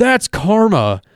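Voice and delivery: acted-out high, yelled-out taunting shout. Retelling what someone yelled out before a scuffle started, retelling a yell. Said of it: "yells out".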